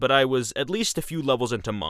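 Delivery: ordinary delivery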